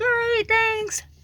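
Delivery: mock very high voice, as if through full mouth. Showing how they answer a server asking how everything is: imitating talking with mouth full. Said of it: "I normally pretend like my mouth's full".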